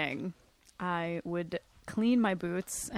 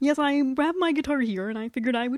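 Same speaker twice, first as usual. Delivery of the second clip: put-on froggy puppet voice, much higher; 6 semitones higher, 6 dB louder than usual. Answering Ben's interview question as Kermit, Kermit the Frog voice. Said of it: "I do a good Kermit the Frog impression".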